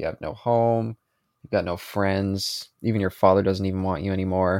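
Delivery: normal talking voice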